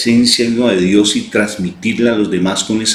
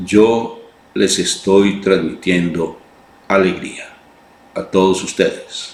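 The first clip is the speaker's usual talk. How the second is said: play-acted grave, composed, calm, slow voice; 2 semitones lower than usual. Retelling a graduation speech by the rector: imitating a calm, very serious speaker. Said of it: "hablando así de una manera calmada".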